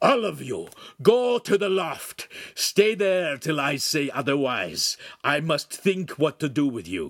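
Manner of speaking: angry, growling voice. A man towers over the boy and orders everyone away, growled command. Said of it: "he growled his next command".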